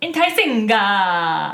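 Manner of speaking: mock Italian word ending. Trying the trick of ending an English word with a vowel: mock Italian, enthusiastic added vowel. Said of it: "saying with a vowel and a lot of enthusiasm".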